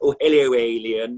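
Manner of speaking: loud dodo bird glove-puppet character voice. Showing a puppet and voicing it: dodo puppet voice. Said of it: "Hello, dodo".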